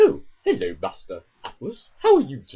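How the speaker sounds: polite, prim, sing-song robot butler voice. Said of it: "Kind of thing with C three P O's voice".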